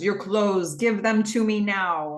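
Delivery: put-on cyborg accent. Recapping a scene, speaker quotes a character demanding clothes, Schwarzenegger cyborg accent. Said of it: "goes full cyborg accent, like all the way trying to impersonate Schwarzenegger".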